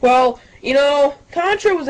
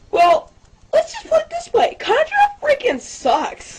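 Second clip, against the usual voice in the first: abrupt jump into a high, swooping voice; 14 semitones higher than usual. A commentator abruptly switches voice mid-commentary, sudden high-pitched voice. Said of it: "Why did he make a high-pitched voice transition?".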